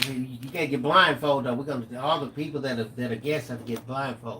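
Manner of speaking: usual speaking voice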